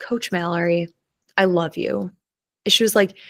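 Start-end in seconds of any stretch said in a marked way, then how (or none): 0.0-2.1 dead-serious, sincere, earnest tone. A swim coach quotes a girl from her team who looked at her very seriously: retelling a very serious declaration. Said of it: "she just looks at me very seriously and goes".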